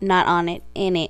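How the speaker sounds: ordinary talk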